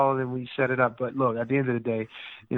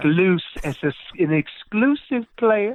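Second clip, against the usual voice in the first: mock British accent, pitched higher; 6 semitones higher, 4 dB louder than usual. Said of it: "Please don't do the British accent".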